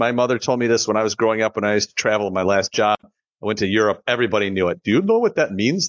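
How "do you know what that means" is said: fake European accent, pitched up. Retelling how people in Europe asked about the name, put-on European accent. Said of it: "This is my European accent".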